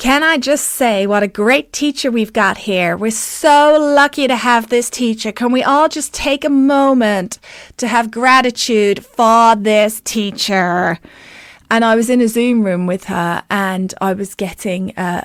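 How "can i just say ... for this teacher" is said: really poor, clumsy put-on American accent. Quoting a woman who unmuted herself at the start of every class: really poor american accent. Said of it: "I'm going to do an American accent that's really poor".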